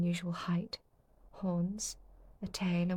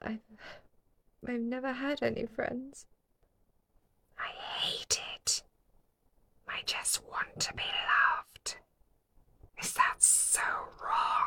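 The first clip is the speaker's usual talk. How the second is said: put-on demon voice, whispered, whispery and breathy; 6 semitones higher than usual. The speaker voices a demon addressing a student, in a demon voice. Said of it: "that's my demon voice".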